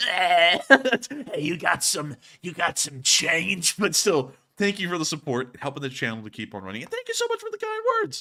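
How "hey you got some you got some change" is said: very slow, drawn-out, heavy chain-smoker voice. Answering a live chat viewer, doing a bit in a heavy smoker voice. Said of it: "I sound like a guy who just smoked forty packs a day".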